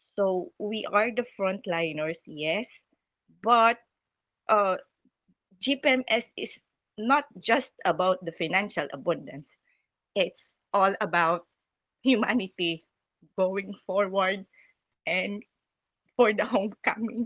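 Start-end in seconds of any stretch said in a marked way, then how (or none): 5.6-17.3 voice choking up, halting, breaking mid-phrase. Thanking a listener for their message, getting emotional. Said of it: "I'm getting very emotional".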